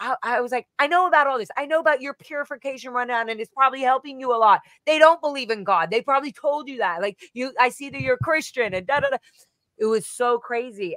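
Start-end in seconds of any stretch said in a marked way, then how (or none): 0.8-8.7 heated, insistent ranting, yelling. Retelling an argument with a Scientologist: retelling own yelling. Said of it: "stop yelling".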